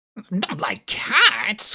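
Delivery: impassioned, shrill, passionate outburst. Narrator reads the mouse retorting after being told it dislikes cats: shrill, passionate voice. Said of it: "cried the mouse in a shrill, passionate voice".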